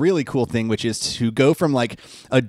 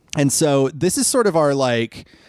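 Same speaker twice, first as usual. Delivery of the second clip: ordinary delivery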